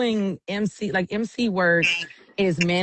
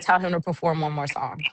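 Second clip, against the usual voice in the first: ordinary talk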